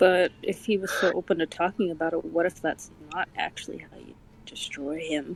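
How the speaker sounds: low, dropped stage whisper. In a role-play scene, a character whispers back to another character; whispering back. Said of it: "He says as he whispers back".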